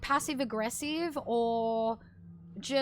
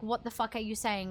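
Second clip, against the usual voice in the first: passive-aggressive, judgmental, incredulous tone; 3 semitones lower than usual. Acting out a reply to someone making no sense: imitating a judgmental reply. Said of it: "I'm being judgmental".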